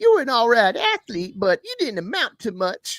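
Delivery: very high, loud, swooping, animated stand-up delivery. Showing how they read an athlete's write-up, using a Katt Williams impression. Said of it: "I read them like Cat Williams".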